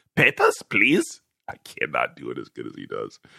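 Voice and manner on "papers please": put-on German accent, pitched very high. Answering a viewer comment, the speaker tries Brad's mock German voice. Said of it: "Is it the German voice?".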